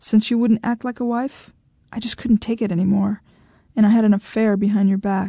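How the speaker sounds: ordinary delivery, nothing marked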